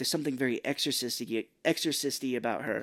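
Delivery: ordinary talk, nothing marked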